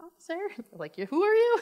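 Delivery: high, loud, mock-sweet innocent charm.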